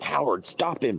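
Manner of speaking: acted-out high yelled call. Retelling how grandma yelled out at a meeting: imitating grandma yelling. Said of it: "my grandma yells out".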